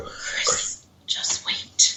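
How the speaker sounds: imitated whispery voice. Describing a recorded EVP from their session: imitating a whispery voice. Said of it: "you hear a whispery voice go".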